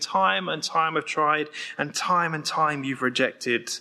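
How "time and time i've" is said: ordinary delivery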